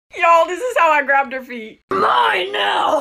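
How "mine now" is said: put-on high, aggressive shout. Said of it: "I aggressively grab her feet".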